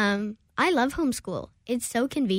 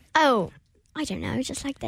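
put-on British accent, sing-song and swooping; 3 semitones higher than usual. Asked how they did the accent, speaker demonstrates a British accent. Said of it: "How did you do that accent?".

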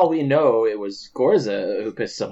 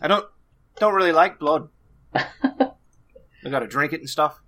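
put-on orc voice, much higher; 6 semitones higher than usual. Game master voicing an orc drinking ale with the players, in orc character voice. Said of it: "an orc comes up behind you, and he's got three flagons of ale. And this is one of the only orcs that y'all haven't spoken to yet. Mm-hmm. And he's holding them out to you. And he looks just like ... And he gives each of you did you guys I'm trying to do [name]'s voice from what's the Avengers with [".

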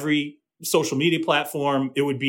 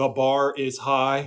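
put-on, mimicked monotone voice. Recalling how he kept repeating a saying, quote it while imitating his monotone. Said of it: "in his monotone saying".

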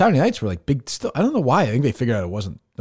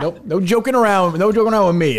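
serious, no-nonsense, all-business voice, pitched higher; 8 semitones higher, 4 dB louder than usual. Teasing about a no-joking act: imitating Chris as all-business guy. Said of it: "He's the all business guy".

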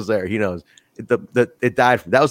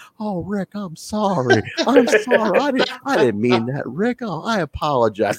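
higher, fake sorry-sounding tone, voice lifted up; 7 semitones higher than usual. Retelling a wrestling angle, imitating Terry Funk's fake apology before the attack. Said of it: "He goes".

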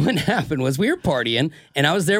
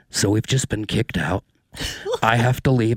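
hushed stage whisper; 5 semitones lower than usual. Retelling words whispered in someone's ear at a club: imitating own whisper. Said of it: "I whisper in Amy's ear".

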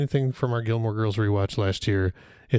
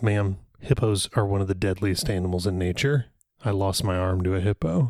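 ordinary delivery

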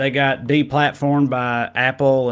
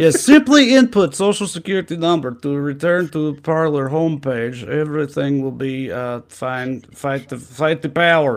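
put-on Russian accent; 2 semitones higher than usual. Speaker does a voice playing russia's side, in a mock russian accent. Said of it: "doing this voice".

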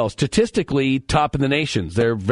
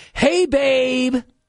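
very high, smitten, lovey-dovey voice; 11 semitones higher than usual. Act out how he answers every time she calls, imitating a man's in-love voice. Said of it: "she'll call and he'll go".

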